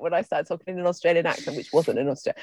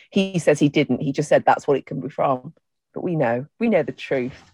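plain

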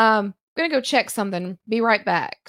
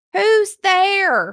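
put-on very high little old lady voice, calling out; 10 semitones higher, 6 dB louder than usual. Retelling knocking on a side door and hearing a reply, little old lady voice. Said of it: "I hear this little old lady voice".

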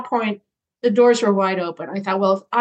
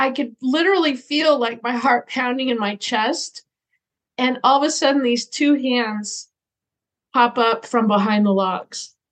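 ordinary talk

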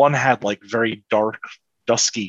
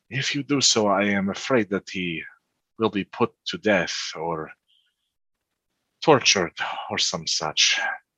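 hushed whispered aside, under the breath. Narrating a character who speaks so the coffin maker won't hear: whispering. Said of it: "he sort of whispers this to you".

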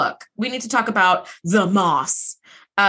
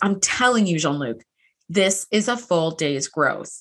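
put-on serious voice, lower pitch; 5 semitones lower than usual. Retelling a scene where Beverly insists to Jean-Luc: imitating Beverly's serious voice. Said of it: "that's her serious voice".

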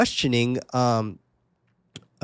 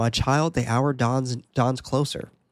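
usual speaking voice

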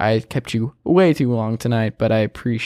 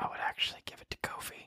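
very soft, confidential whispered aside. Giving a pick in a debate with a friend, the speaker whispers. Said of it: "I'm going to whisper".

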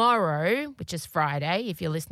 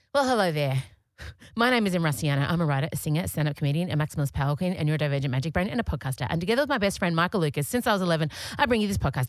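rapid-fire, very fast, rattled off at full speed. A podcaster shows the speed their intro runs in their head, very fast talking. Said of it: "That's how fast I want to talk".

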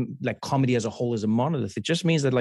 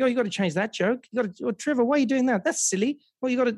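higher Australian comedian's voice; 11 semitones higher than usual. Retelling a comedian's advice on his jokes: imitating an australian comedian. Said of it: "She's like".

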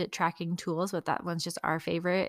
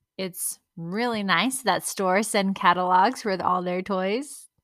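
dripping, loud sarcastic tone; 2 semitones higher, 7 dB louder than usual. Remarking that stores send catalogs full of toys: sarcastic.

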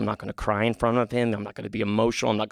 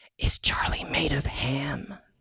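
put-on hushed, very slow little-kid whisper; 4 semitones higher than usual. Retelling a child's whispered question about the dog: imitating a child whispering. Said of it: "he just whispered".

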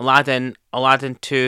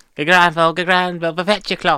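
put-on shopkeeper voice, higher; 5 semitones higher than usual. Quoting lines after a co-host mentions the character: Albert Arkwright voice.

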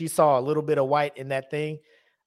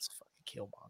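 whispering, lower and quieter; 6 semitones lower, 24 dB quieter than usual. Retelling watching a movie scene in a theater: retelling a whisper. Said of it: "I whispered to myself".

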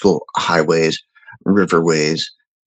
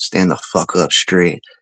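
whispered voice. Retelling what the company commander whispered in the ear at graduation: imitating a whispered order. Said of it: "whispering, whispering in my ear".

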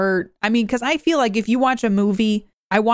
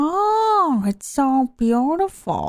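high, very slow coo with stretched "oh"; 5 semitones higher than usual. Trying out an impression after admitting it's hard: Jennifer Coolidge impression. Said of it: "I can't do a Jennifer Coolidge impression".

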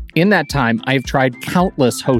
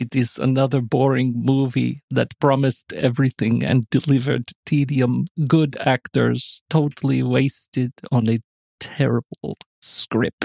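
imitated German accent. Reading a listener's one-star review aloud: Werner impression. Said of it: "Your Werner's getting a little better".

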